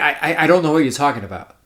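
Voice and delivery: plain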